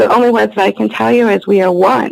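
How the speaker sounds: plain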